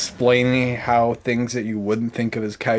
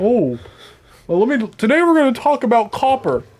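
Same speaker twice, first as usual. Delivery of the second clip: very high, sing-song voice; 11 semitones higher, 4 dB louder than usual. Joking that a cartoon dog teaches a lesson: imitating Clifford the Big Red Dog. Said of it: "Clifford the big red dog would roll up and be like".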